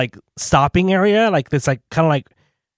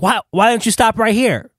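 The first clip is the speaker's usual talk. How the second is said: acted-out raised, high-pitched yell; 7 semitones higher than usual. Speaker recounting a woman at the airport shuttle stop, retelling her yell. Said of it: "she's yelling like".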